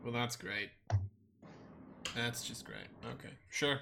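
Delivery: fast, flat, unenthused sarcastic deadpan. Reacting to a plan to kill someone from an alliance: sarcastically unenthused. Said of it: "you sound excited".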